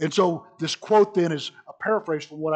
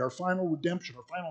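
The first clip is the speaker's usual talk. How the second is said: soft, choked-up voice that catches. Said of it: "I choke up, choked up thinking about".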